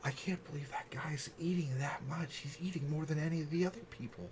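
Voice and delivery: very quiet grumbled mutter under the breath. Voicing a character grumbling about a guest's eating: muttering under her breath. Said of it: "you could kinda hear her under her breath".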